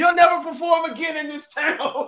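high, loud, mock dramatic shouting.

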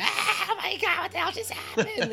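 very high, wild, crazed, frantic screaming. Recounting a freaky moment with others in the car, retelling screaming like crazy. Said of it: "We're all screaming like crazy".

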